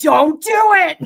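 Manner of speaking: shrill, very high, very loud yelling. Retelling how a video maker yells at her emu: imitating someone yelling. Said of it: "she's always yelling at it".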